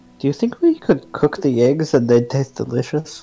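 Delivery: hushed, half-whispered stage whisper. Speaking in character to a companion on the way back to camp: half-whispering. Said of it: "Brian is going to whisper to Edward".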